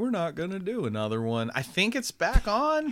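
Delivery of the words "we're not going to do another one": put-on down-home country accent. Retelling a company's announcement about a show, in a country voice. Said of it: "It's funny that you use that country voice".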